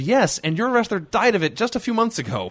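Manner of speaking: shrill, very high shrieked scream. Retelling a reply to a commentator's remark: imitating own past scream. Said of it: "And I screamed".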